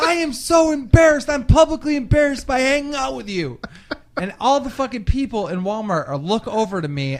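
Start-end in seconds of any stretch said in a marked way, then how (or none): 0.0-3.6 loud, high-pitched, out-of-control ranting outburst. Retelling a pickle-eating scene at Walmart: imitating Blade losing it. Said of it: "Blade loses it".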